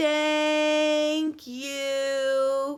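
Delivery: very slow, each word stretched long and drawn out. Reading the diary entry, Todd repeats the phrase for the narrator: very slow. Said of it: "He said very slowly".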